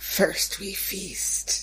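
spooky, eerie, creepy whisper. Imagining a creepy figure in an echoing hallway: creepy whisper. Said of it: "someone in, uh, Sunny whispering".

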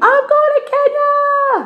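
play-acted very high, drawn-out scream, Kenya stretched long. Recounting what they screamed when they got the news, retelling a scream. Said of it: "I screamed".

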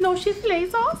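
very high, squeaky drive-thru cashier voice.

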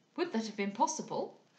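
plain

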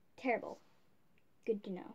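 sarcastic, swooping sing-song tone. Checking how the leg with the tattoos is doing, sounding sarcastic. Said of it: "I'm being sarcastic".

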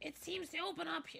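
put-on toad voice, very high. A streamer reads a game character's line aloud; toad voice. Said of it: "That's a toad voice".

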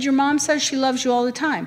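ordinary talk

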